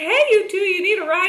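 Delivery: very high, loud shout. Retelling how a man in a stretch limo called out: imitating someone shouting. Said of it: "screamed out his window".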